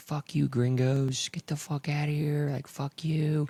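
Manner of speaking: put-on high-pitched yelling, street style. Retelling how guys on the street yelled at them: imitating men yelling. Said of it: "some guys were yelling at us on the street".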